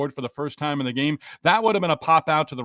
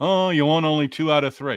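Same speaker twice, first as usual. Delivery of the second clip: sarcastic, tongue-in-cheek, whiny groaning. Retelling how fans moan after a series win: imitating moaning, complaining fans. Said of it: "We would be moaning and groaning".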